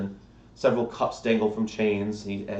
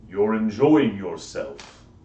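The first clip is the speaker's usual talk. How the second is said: huge, deep, booming giant voice; 4 dB louder than usual. Standing behind the player's three-foot character, a game master speaks in a deep voice. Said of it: "in a deep voice that shakes your tiny frame".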